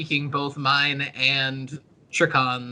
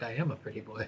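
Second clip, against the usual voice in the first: very quiet, low mutter under the breath; 5 semitones lower, 13 dB quieter than usual. Speaking in character during a discussion, said under the breath. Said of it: "under my breath".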